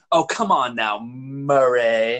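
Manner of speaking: slow campy drawl, stretched, 80s caricature style.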